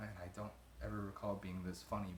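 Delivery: ordinary delivery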